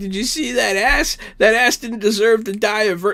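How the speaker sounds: put-on high, weepy, slurred drunken sobbing, words smeared. Retelling a drunk, crying character's line: imitating drunk slurred crying. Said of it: "slurring her speech, and she's, like, crying".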